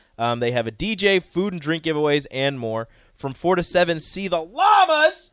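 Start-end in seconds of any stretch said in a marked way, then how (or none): 4.0-5.1 very high, loud, all-out scream. Reading out festival event listings: screamed. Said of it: "I had to scream it".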